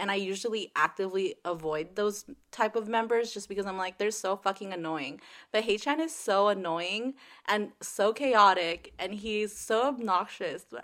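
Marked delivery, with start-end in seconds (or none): none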